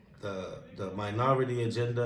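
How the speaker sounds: ordinary talk, nothing marked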